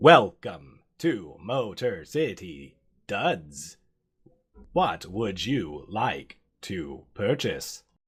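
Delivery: robot cashier voice. Voicing a robot cashier greeting a customer at the counter: robot cashier voice. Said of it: "the robot cashier looks at you and says".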